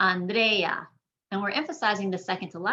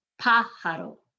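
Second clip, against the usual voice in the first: pájaro with strong first-syllable stress on pa. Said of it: "You're emphasizing that first syllable".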